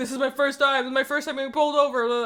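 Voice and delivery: put-on panicking voice. Retelling a traffic stop, imitating the panicking taxi driver. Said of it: "the taxi driver's panicking".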